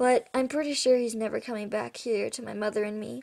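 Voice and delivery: ordinary delivery, nothing marked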